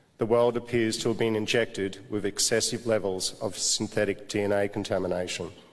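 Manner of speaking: ordinary talk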